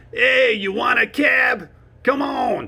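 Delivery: New York accent, drawn out. Showing how people talk in New York City: New York City accent. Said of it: "this is how they talk in New York City".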